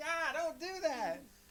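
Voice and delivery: high, loud, slow squirming outcry.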